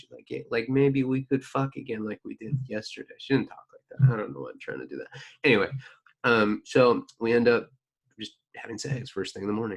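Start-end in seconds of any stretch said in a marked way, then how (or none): 0.3-3.1 put-on female New York accent, tried on. Quoting a woman from the story, attempting a female New York accent impression. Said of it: "a female New Yorker accent".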